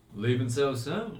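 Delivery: relaxed, appraising tone. Narrator voicing a character who steps across the road toward the group, relaxed, appraising tone. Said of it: "relaxed position ... looks at you all appraisingly and says".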